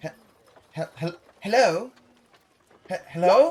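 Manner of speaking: high, quick, refined noble woman's voice, stammering. The narrator voices a woman heard in a player's mind: noble-sounding woman's voice. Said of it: "a noble sounding uh, woman's voice go".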